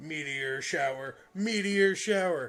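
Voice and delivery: mechanical, robotic computer announcer voice. Retelling an old TV show scene, the computer announcement in a robotic computer announcement voice. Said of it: "in a robotic voice".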